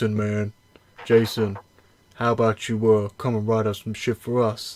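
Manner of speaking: put-on Southern accent. Retelling how Bellator courted Jason, imitating Bellator in a Southern accent. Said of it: "from New York and Boston a southern accent".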